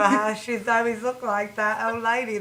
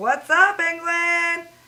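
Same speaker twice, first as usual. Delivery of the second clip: put-on cool American accent, pitched up; 7 semitones higher, 4 dB louder than usual. Planning to go to England and greet the country: American accent. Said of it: "talk like this now".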